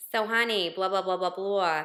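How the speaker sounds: put-on Yiddish-inflected accent.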